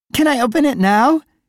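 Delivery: loud, very high, eager, excited voice. Cassie, on her birthday, asks her father Scott about his present, excited. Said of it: "she asked excitedly".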